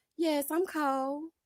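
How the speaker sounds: put-on cutesy little baby voice, soft and high. Speaker acts out answering a man who says the speaker is cold, little baby voice. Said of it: "my little baby voice".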